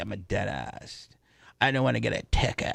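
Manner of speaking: heavy put-on vocal fry, creaky, fried-out voice. Describing a dentist video clip to co-hosts, imitating the dentist's vocal fry. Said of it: "I didn't really appreciate her vocal fry".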